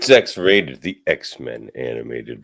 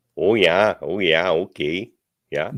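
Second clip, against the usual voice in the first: spoken in Minnesota accent; 4 semitones higher than usual. Answering a request to throw in an accent: Minnesota accent.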